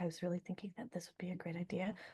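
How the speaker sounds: very quiet, near-whispered, hushed delivery. Showing a way of announcing a change that fails: saying it very quietly. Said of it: "So you sort of say it very quietly".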